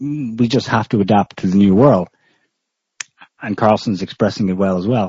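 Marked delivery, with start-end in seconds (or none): none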